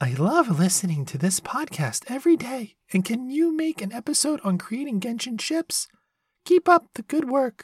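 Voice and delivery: put-on very high, sing-song anime girl voice, swooping around. Reading a listener's message aloud on the podcast, Kokomi voice. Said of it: "Hope that was a good enough Kokomi's voice".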